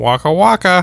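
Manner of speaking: high cartoonish bear voice. Discussing which Muppet voice to do: Fozzie Bear voice. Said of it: "You just said you didn't want to be Fozzie Bear".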